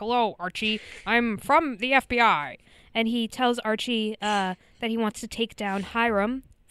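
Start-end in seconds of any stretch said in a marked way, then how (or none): 0.0-2.6 strange, wild voice. Recapping a TV episode, quoting the FBI agent: Agent Adams crazy voice. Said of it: "He has like a crazy voice".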